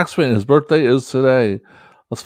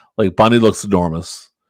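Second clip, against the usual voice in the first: plain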